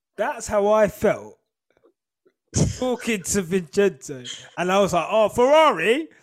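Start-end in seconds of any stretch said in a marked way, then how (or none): 5.1-6.0 put-on raised, pitched-up, stupid-sounding, clumsy British accent. Retelling chatting with a man about ferrari, in own stupid british accent. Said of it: "in my stupid British accent".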